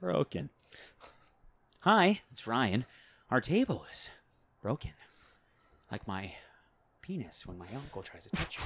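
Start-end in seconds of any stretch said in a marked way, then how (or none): 1.8-8.6 put-on deadpan celebrity voice. Showing a celebrity voice for a skit idea: Ryan Reynolds voice. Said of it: "my Ryan Reynolds".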